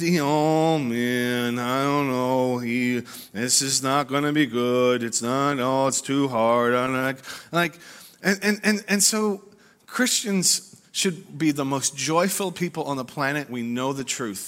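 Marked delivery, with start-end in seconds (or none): 0.2-7.2 slow, drawn-out, mopey, gloomy complaining tone. Saying some listeners are like Eeyore: Eeyore voice. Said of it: "some of y'all are like Eeyore".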